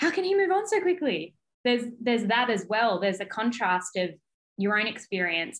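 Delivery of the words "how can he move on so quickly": put-on tearful sob, very high pitch. Recalling being on the shower floor while he was out dating, imitating your past self sobbing. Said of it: "on the floor of the shower sobbing".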